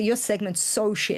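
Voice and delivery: normal talking voice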